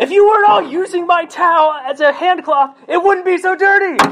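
very high, shrill, furious screaming. Speaker acts out their past self yelling at the roommates, retelling a yell. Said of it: "I find myself just yelling and screaming at my roommates".

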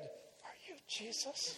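hushed whisper, under the breath. Retelling a letter about asking a question among other people: imitating speaking under his breath. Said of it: "under my breath".

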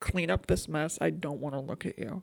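quiet low dismissive tone. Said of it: "She's like".

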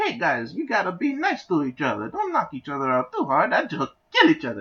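very high, swooping little Italian guy voice. The speaker acts out a little, short italian guy voice. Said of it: "just like a little short Italian guy".

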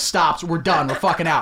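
plain

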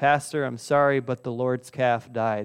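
plain

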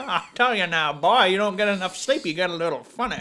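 terrible cartoon character voice. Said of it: "A terrible foghorn".

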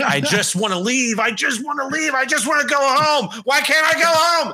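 put-on very high, shrill, repeated screaming cry. Recounting a nightmare set in a Walmart, the speaker retells a scream. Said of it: "And I was just screaming like".

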